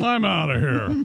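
talking like a bear. On a radio show, speaker voices a bear character: bear voice. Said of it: "That's a bear voice".

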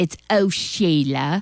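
fake, bad, put-on English accent. Radio host announcing herself on a Friday night show, in a bad English accent. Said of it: "my bad English accent".

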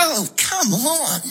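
high, strained groan of frustration. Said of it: "This is the sound of [name] opening her Comalco sliding window".

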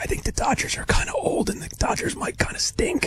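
soft, unvoiced whisper.

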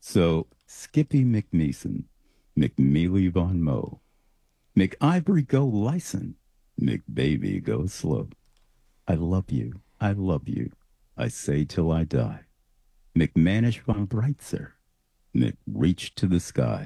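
sultry, seductive delivery. Reading his own poem aloud when asked, in a sultry voice. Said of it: "that sultry voice of yours".

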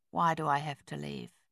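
speaking low. A man, told by a woman to leave, asks her why; low voice. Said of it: "His voice was low".

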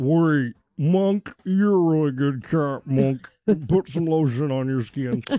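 distinctive creepy villain voice. You are joking about an actor in another role, addressing Monk in a distinctive Buffalo Bill voice. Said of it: "he's got a very distinctive voice".

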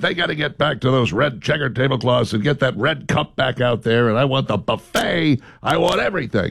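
pushy, insistent, aggressive demanding rant. Retelling to the other speaker what they once said: mock-aggressive impression of them. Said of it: "That sounded aggressive".

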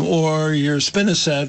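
ordinary talk

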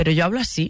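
ordinary delivery

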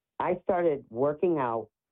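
ordinary delivery

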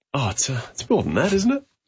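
huffing and puffing, winded. Arriving in the studio just in time with news, out of breath. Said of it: "the way you're huffing and puffing".

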